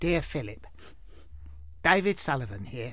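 whispery put-on reading voice, breathy and hushed. Reading out a letter from a club chairman, in a David Sullivan voice. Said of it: "I'll try and do the voice a bit".

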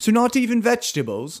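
bad, fake, very high-pitched British accent. Retelling what a man said in a conversation, in a bad British accent. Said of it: "I can't do a British accent".

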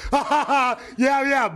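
high, loud laughing whoops.

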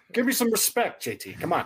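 squeaky, bad comedian voice, pitched way up. Joking after a correct trivia answer: bad Rodney Dangerfield impression. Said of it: "that was a bad impression".

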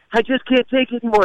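play-acted full-on rage, very high pitch outburst. Telling a story, acting out a man about to scream, imitating someone in a rage. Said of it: "in this full-on rage".

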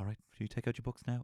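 mild, even, calm, unraised teacher voice. Recalling a teacher speaking to the class, imitating Razzmatazz never raising voice. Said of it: "he used to very seldom raise his voice".

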